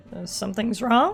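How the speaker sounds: anxious voice cracking and breaking midway. Speaking to someone, voice crack. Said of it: "I apologize for that voice crack".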